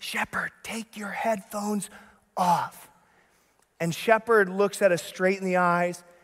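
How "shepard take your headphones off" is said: eager, enthusiastic stage whisper, nearly mouthed. Retelling how the parents signal to a child across the room: imitating an enthusiastic whisper. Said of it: "We whisper and we mouth enthusiastically".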